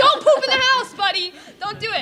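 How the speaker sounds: high, controlled, held-in-check yell. Showing the crowd how to yell at the person in the green shirt, yelling. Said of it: "You gotta yell at him".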